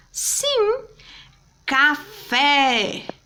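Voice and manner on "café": café with stressed, louder fé. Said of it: "Qual foi a sílaba que eu pronunciei com mais força".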